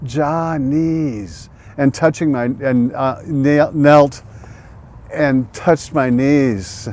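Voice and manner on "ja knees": put-on Jamaican accent. Recalling a kind man praising his knees, in a jamaican accent. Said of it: "praising my knees in a Jamaican accent".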